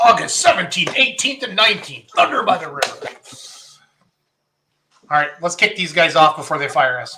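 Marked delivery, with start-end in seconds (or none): 0.0-3.1 higher, bright announcer voice. Announcing the event dates and name to close the segment: announcer voice. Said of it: "getting my announcer voice ready".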